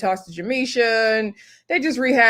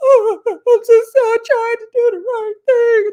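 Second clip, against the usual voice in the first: put-on very high, loud, over-the-top blubbering; 8 dB louder than usual. Retelling how Aunt Nikki suddenly broke down and was being dramatic, imitating someone boo-hooing. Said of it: "Nikki starts boo hooing".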